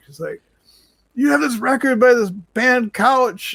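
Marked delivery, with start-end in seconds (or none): 1.1-3.5 stretched-out, slow, very high shrieking scream. Retelling a call offering records to a woman who starts screaming; imitating a woman screaming. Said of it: "starts screaming in the back".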